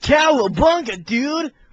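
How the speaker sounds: very high, very loud surfer dude voice. Showing how the characters sound as surfer dudes: surfer dude voice. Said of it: "they say California lingo".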